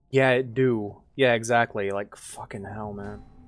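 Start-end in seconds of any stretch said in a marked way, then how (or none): 1.9-3.2 fed-up, frustrated, angry swearing. Complaining about a neighbor who screams at her dog: angry. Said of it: "I'm just kinda pissed off".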